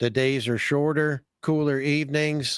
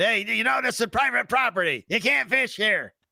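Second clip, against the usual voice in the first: high, put-on grumpy voice. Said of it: "wearing sandals and saying".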